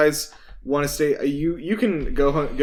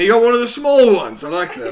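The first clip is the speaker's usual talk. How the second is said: very loud, booming, sing-song put-on voice; 7 semitones higher, 8 dB louder than usual. Playing a character greeting the adventurers and their hobbit: put-on uncle voice. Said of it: "let me get my uncle voice on here".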